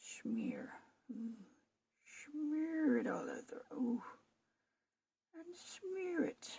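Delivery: goofy, daft, high-pitched put-on voice. Doing a marbling project on video, the speaker uses a stupid put-on voice. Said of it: "I don't know what's with the stupid voice".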